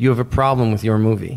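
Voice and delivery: ordinary delivery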